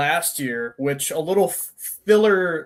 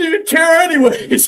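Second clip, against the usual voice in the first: wailing fake sobbing, very high and loud; 13 semitones higher, 8 dB louder than usual. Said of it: "crying. I'm like".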